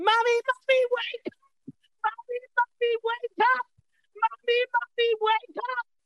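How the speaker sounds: put-on very high, shrieking, screaming little girl voice. Speaker quotes a little girl seen online, imitating a little girl screaming.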